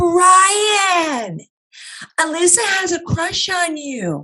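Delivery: shrill, very high, teasing, drawn-out holler. Alyssa retelling what a girl yelled out to Brian: imitating someone screaming out. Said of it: "she starts screaming out".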